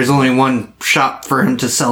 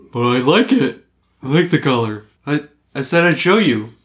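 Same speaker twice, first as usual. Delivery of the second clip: put-on talking dog character voice; 3 semitones higher than usual. Told to get back to the dog voice, the performer keeps going: dog voice. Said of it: "Get back to the dog voice".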